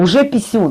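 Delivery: ordinary talk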